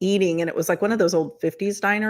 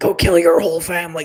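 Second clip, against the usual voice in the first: loud, possessed, demon-like voice; 6 dB louder than usual. Retelling what came through over the regular music, the speaker does a demonic voice. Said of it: "demonic voice came over".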